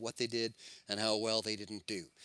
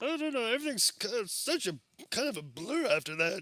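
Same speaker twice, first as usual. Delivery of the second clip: very high, squeaky cartoon character voice; 11 semitones higher than usual. Quoting a line, doing an impression of a Simpsons character. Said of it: "you did a really good impersonation of him".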